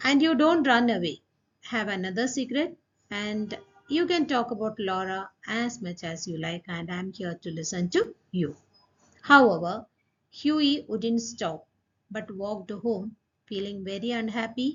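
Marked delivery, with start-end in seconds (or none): none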